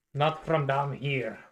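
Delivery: loud put-on Scottish-accented dwarf voice. Voicing a dwarf telling of screaming outside: Scottish accent dwarf voice. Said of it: "these are Scottish dwarves".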